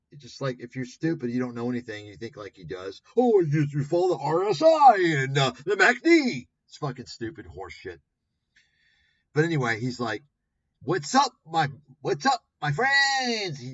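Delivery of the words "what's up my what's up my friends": put-on masked Singaporean accent, much higher, louder, slower. Mimicking a guy greeting his friends, imitating a man masking his Singaporean accent. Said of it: "to mask his like obvious Singaporean accent".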